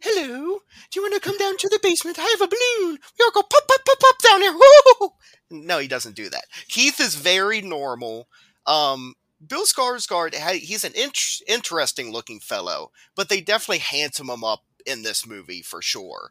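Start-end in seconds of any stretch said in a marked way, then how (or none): 0.0-5.1 very high, very loud, squealing clown voice. Joking that Pennywise answers the door in a film scene: Pennywise voice. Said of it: "Pennywise answers the door. He's like".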